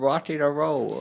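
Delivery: loud, belted rock-and-roll idol voice.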